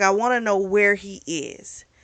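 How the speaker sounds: normal talking voice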